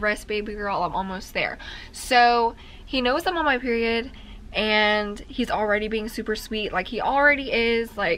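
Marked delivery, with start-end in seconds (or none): none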